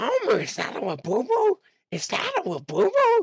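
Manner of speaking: very high cartoon voice, pitch swooping and swinging. Asked for a line, the speaker attempts a Marge Simpson voice. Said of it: "I could probably do Marge".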